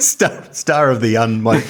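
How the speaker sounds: giggling, giggly delivery.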